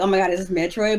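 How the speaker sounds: usual speaking voice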